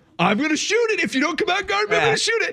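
very high, squeaky voice. Describing how every Draymond three looks: imitating Draymond Green. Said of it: "but he goes".

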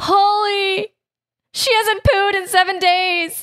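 high, far-off panicked wail.

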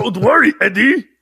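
loud, high, booming cartoon monster creature voice. Joking about looking forward to watching it, in a Venom impression. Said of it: "That's their Venom impression".

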